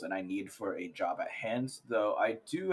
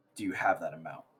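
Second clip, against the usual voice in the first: low, mumbled mutter under the breath; 5 semitones lower than usual. In character, with a man standing over there, muttering a question. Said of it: "I'm going to mutter".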